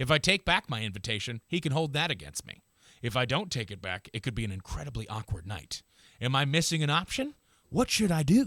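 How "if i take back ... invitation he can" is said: usual speaking voice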